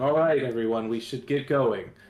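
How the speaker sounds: loud announcer-style voice. Speaking in character to a crowded camp: loud in-character announcement. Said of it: "And then I'm loudly".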